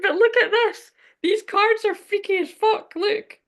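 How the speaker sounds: giggling, very high-pitched laughing talk. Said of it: "I'm sorry for laughing".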